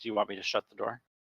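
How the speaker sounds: speaking softly and really quietly. Voicing a character holding the door, asking whether to shut it: asking really quietly. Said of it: "really quietly ask".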